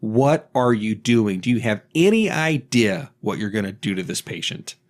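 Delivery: put-on doctor voice, yelling. Retelling how a doctor yelled at a nurse: imitating a doctor yelling. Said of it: "he just yells at her".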